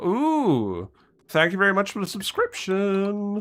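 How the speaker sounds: cracking, cracked voice. Thanking a viewer for a subscription, voice cracking. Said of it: "my voice is cracked then".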